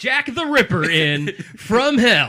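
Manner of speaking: very loud, booming, high radio announcer voice. Announcing Jack the Ripper in From Hell to the others, sounding like Guy Fieri. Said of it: "You sound like Guy Fieri".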